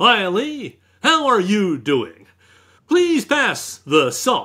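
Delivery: very slow, polished on-camera presenter announcer voice. Imitating a dad who always talked like he was on camera: on-camera announcer voice. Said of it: "your dad always talked to you like he was on camera".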